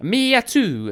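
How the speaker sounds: very high, loud, put-on movie-mafioso Italian accent. Reading a number plate aloud: put-on Italian accent. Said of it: "in an Italian sort of way".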